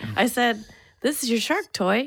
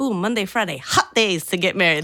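put-on New York Bronx accent in a woman's voice; 3 semitones lower than usual. Retelling asking a lady when to come back and get married, the speaker imitates the lady's accent. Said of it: "where was she from jersey".

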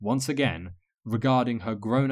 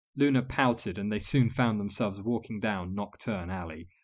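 usual speaking voice

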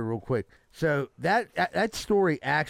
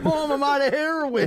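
fake sobbing, pleading tone, higher and louder; 12 semitones higher, 4 dB louder than usual. Joking about crying in mom's arms: mock crying to mom. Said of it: "was crying in my mom's arms like".

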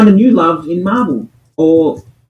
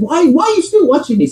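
put-on Colombian accent, pitched very high; 10 semitones higher than usual. Speaker quoting his partner while he watched a show, in a Colombian accent. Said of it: "In a beautiful, beautiful Colombian accent".

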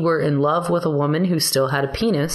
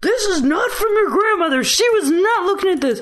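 mock, very high, shrill scolding scream. Retelling what a friend kept saying to a kid, retelling a friend screaming. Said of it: "My friend just kept screaming at him".

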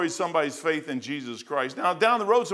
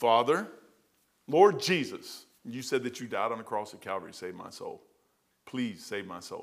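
slow, deliberate delivery, each word spaced apart; 7 semitones lower, 6 dB quieter than usual. Speaker retells praying again after getting no answer; retelling a slowed-down prayer. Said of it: "I slow down".

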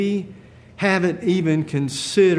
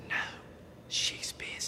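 put-on hushed, whispered small child's voice. Telling a joke, voicing a little boy on the phone: imitating a whispering little boy. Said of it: "the little boy comes back with a whisper".

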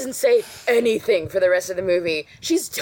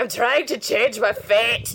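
poor, fumbling, put-on Scottish accent; 4 semitones higher than usual. Doing a requested Merida impression, admittedly bad at accents: Merida voice, bad Scottish accent. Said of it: "she's like".

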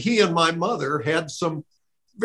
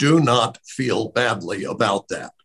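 put-on deep voice, much lower; 7 semitones lower than usual. Quoting what his father told him about growing up, imitating a deep voice. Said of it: "I cannot imitate how deep his voice was".

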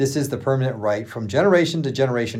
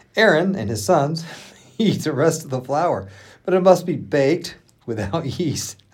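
reading aloud, words broken by giggling laughter; 3 semitones higher than usual. Reading a passage aloud to another speaker, laughing while reading. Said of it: "Why is that funny?".

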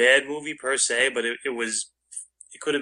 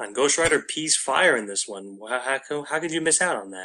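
normal talking voice

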